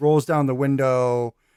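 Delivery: ordinary talk, nothing marked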